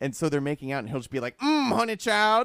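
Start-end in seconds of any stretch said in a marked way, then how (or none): 1.4-2.4 blurted out high and loud. Retelling a movie scene, blurting out a line in Loquisha's voice. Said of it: "blurting out things in Loquisha's voice".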